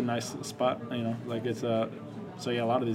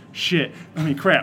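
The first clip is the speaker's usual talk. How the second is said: very loud, high, acted-out flustered blurt; 5 semitones higher, 10 dB louder than usual. Retelling a movie scene where a man swears by mistake, acting out a nervous slip. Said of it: "So gets all nervous and screws it up".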